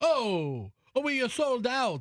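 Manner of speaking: put-on Italian accent. Retelling being told Sforno was sold out, speaker does an Italian accent. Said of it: "do an Italian accent, would you please?".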